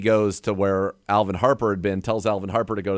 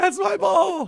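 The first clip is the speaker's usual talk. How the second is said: mock shrill, frantic scream, very high-pitched. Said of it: "Irv's running after Harper down the field screaming".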